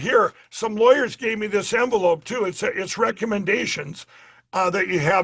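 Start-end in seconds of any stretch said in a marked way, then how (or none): none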